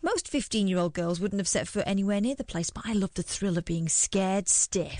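ordinary delivery

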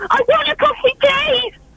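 high demanding tone. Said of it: "Demand a coffee".

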